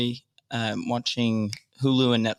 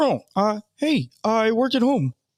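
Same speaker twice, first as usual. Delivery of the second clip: put-on puppet voice, pitched higher; 10 semitones higher, 3 dB louder than usual. Role-playing a comic strip character: Bert voice. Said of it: "I'm gonna be Bert from Bert and Ernie".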